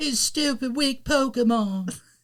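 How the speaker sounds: very high, drawn-out British voice. Retelling an anime scene where a trainer abandons Charmander: imitating Damian's British voice. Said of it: "sound like he was in a British boy band".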